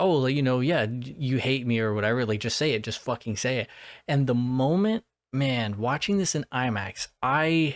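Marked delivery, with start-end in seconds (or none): none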